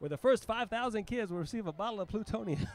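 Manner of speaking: very high-pitched ballpark stadium announcer voice. Retelling a comedian's bit at a minor league baseball game: Bob Uecker impression. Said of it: "he would pretend to be Bob Uecker".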